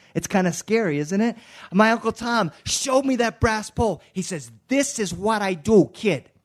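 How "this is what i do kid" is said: put-on light Boston accent. Telling an audience how his uncle showed him the brass pole: Uncle Tom's Boston accent. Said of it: "That's the Boston speaking a little bit".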